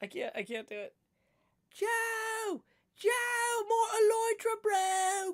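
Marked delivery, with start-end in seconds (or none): 1.7-5.3 clumsy, very high, slow, drawn-out voice. Showing the bad impression of Ollie he was doing earlier. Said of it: "I just can't do that voice".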